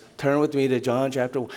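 low, flat, dull drone without any energy. Imitating a speaker who told no stories or jokes, flat monotone. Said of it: "His voice was so monotone. It was like not dynamic. He just spoke like this".

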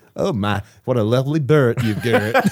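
put-on campy, southern-tinged American accent. Showing the others how the line should sound, in a camp southern accent. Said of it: "in a camp, sort of like southern sort of way".

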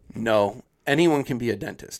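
completely earnest, dead-serious, no joking. Retelling a dentist's answer to Allie, imitating someone very serious. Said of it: "very serious".

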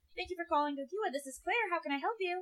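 high-pitched customer-service telephone voice. Showing how she answers the phone at work: high customer-service voice. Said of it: "I'm talking up here in this register".

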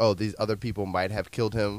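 ordinary delivery

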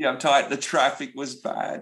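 put-upon little whine. Retelling how audience members answer with excuses: imitating people whining. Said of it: "It's the whining".

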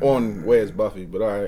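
flat and unexcited. Greeting the podcast as a first-time guest: unenthusiastic. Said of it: "Sounds so thrilled".

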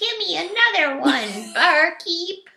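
put-on high, drawn-out child voice. Voicing the little drunkard Doji as a small kid, Doji in a terrible child's voice. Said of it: "It's a terrible child's voice".

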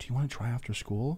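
gentle, very soft, hushed, near-silent voice. Retelling how a boy in class asked him something, retelling a soft question. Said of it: "he asked me like softly".

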